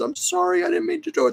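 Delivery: very high, rough, creaky, sorry little voice. Voicing the sulking kitten's apology again: voicing a sincerely sorry cat. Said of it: "She was so sincerely sorry".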